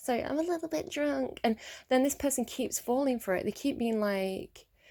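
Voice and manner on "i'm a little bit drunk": put-on, high-pitched little baby girl voice. Retelling how someone talks to win sympathy: imitating a little girly voice. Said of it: "She puts on a little girly voice".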